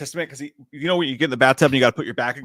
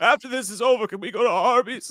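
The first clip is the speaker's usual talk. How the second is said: put-on quavering voice, pitched higher; 9 semitones higher than usual. Imitating RFK during a hearing, wanting food: quavering RFK voice. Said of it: "his voice is quavering".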